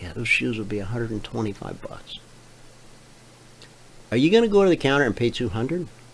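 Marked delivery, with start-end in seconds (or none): 0.0-2.2 whispered, much quieter. Acting out a store clerk in a story, whispering to a customer at checkout. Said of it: "the clerk whispers to you".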